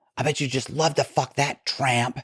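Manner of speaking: high, piercing squeal. Retelling what a partner said stepping off an elevator: imitating someone squealing. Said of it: "she squeals".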